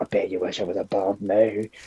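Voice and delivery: voiced, hushed half-whisper, very close. Playing a character who holds a foe in a headlock: half-whispering in his ear. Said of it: "I'm basically just whispering in his ear".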